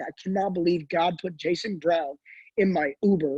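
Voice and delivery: ordinary talk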